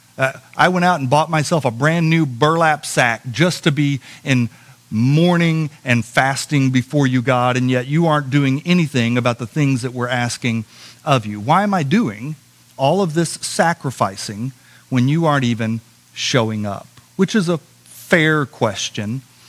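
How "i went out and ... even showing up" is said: ordinary talk, nothing marked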